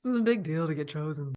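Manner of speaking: put-on low, deep, husky woman's voice. Quoting what Linda says, in a deep husky Linda voice. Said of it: "How did your voice get that deep just now?".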